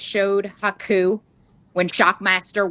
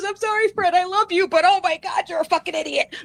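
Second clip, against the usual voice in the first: put-on very high voice, words squeezed out mid-laugh; 10 semitones higher than usual. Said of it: "He's laughing so hard".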